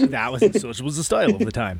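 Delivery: high, laughing, goofy funny voice.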